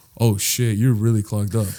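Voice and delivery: put-on sweet voice. Retelling his reaction after the throw-up: imitating someone sweet. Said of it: "his demeanor changed to being sweet again".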